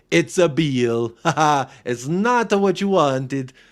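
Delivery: put-on slow, drawn-out, drawling Italian accent. Mocking a reporter's disappointing news post: Ali Gold in Italian accent. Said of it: "giving Ali Gold a fucking Italian accent".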